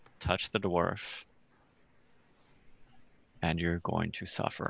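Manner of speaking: very quiet, hushed, barely above a murmur. Leaning toward Atson, the speaker voices Bastian speaking very, very quietly. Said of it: "say very, very quietly".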